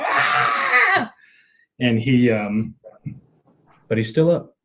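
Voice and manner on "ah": shrill, very high scream of pain. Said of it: "and he's screaming".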